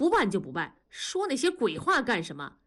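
ordinary delivery, nothing marked

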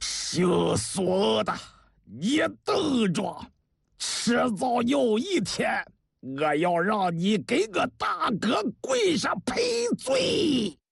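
teeth-clenched delivery through gritted teeth, rising. Narrator reading a character's line after he stops crying, through gritted teeth. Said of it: "咬牙切齿地说".

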